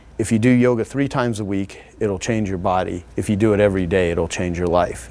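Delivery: ordinary delivery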